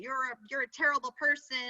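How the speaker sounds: normal talking voice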